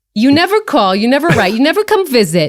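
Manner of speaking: full, high put-on New Jersey accent.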